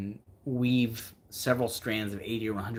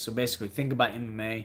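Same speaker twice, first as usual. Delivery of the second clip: ordinary talk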